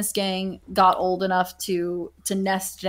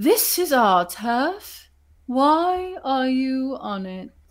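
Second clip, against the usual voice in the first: put-on very high, very slow, drawn-out old owl voice; 5 semitones higher than usual. Voicing the oldest owl, who waddles forward to speak: old owl voice. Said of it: "Nicola, who, who you all know is the oldest".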